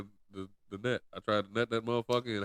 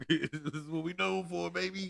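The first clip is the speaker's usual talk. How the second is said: rough, raised, raspy New York tough-guy voice; 8 semitones higher than usual. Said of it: "like D M X to like New York hoodlum".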